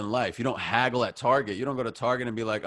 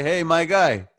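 Middle Eastern accented speech; 5 semitones higher, 7 dB louder than usual. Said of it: "It's tough for me to do my own".

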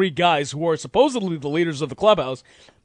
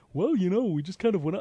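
quieter, sing-songy put-on impression voice; 2 semitones higher, 7 dB quieter than usual. Speaker mocking the way a team manager talked: Bobby Valentine impression. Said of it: "just the way he talked just pissed me off".

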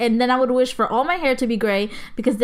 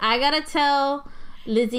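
ordinary delivery

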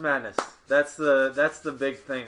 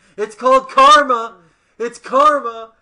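shrill, very loud, high drawn-out heckling shout; 10 semitones higher, 12 dB louder than usual. Retelling how a player interrupted an interview: imitating someone yelling.

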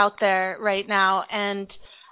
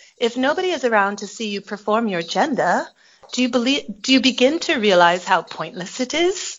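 light, slight put-on British accent. Reading aloud the other speaker's post: faux British accent. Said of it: "My delivery was a little bit of a faux British accent there".

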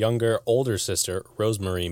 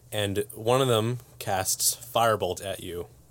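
ordinary talk, nothing marked

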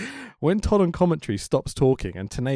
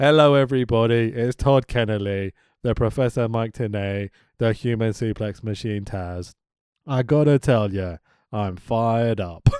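put-on flat announcer voice, lower pitch; 3 semitones lower than usual. Imitating an announcer's wrestling pay-per-view introduction, do a flat Todd Kennelly impression. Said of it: "Tell your fucking voice".

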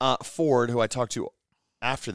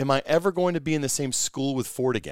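normal talking voice

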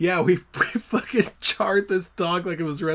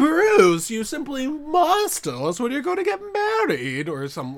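sing-song, high, swooping, drawn-out mom voice; 7 semitones higher than usual. Performer trying the take again, calling out to Bruce, like the Sleepaway Camp mom. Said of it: "She sounds like the mom in Sleepaway Camp".

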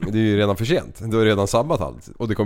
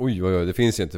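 ordinary delivery

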